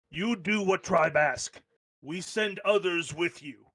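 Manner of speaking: firm, stern, no-nonsense scolding tone. A frost giant elder gives a reluctant teenage giant a stern talking-to. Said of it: "gives her a stern talking to".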